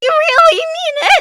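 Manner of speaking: cracking, breaking voice, very high and loud. Voice actor recalling recording a line, imitating their voice cracking. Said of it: "my voice was cracking so much".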